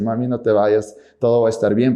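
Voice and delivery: ordinary talk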